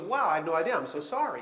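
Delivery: ordinary delivery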